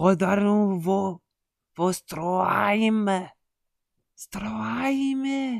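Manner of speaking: poorly done fake German accent. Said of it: "je sais pas faire l'accent allemand".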